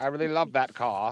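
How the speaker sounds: Maine accent impression. Repeating a line from a short clip just played, in a Maine accent. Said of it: "You do that Maine accent really well".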